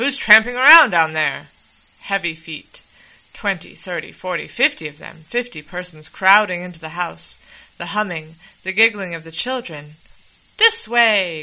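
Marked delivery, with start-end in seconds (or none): 10.6-11.4 calling out loudly. Mink, downstairs, calling to the people coming into the house, crying out. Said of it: "cried Mink".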